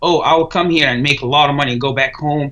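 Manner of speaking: ordinary talk, nothing marked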